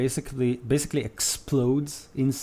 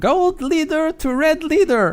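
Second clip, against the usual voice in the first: piercing goblin battle yell, very high, very loud; 8 dB louder than usual. Game master voicing a goblin leader calling to the red goblin: shouting. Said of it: "The goblin with the gold helmet shouts".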